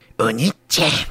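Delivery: put-on quiet cartoon girl voice. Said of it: "俺のモノマネは、ジャイコ".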